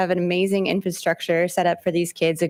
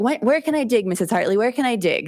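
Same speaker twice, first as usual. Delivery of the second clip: put-on excited, eager child's voice; 4 semitones higher than usual. Retelling how kids ask where they can dig: imitating eager kids. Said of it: "kids are like".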